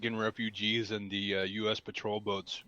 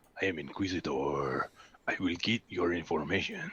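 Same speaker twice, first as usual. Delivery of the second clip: low, put-on, heavy Spanish accent, superhero style; 4 semitones lower than usual. Joking that a news source sounds like a superhero, speak as Inquisitor with put-on Spanish accent. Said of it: "this accent is not at all racist".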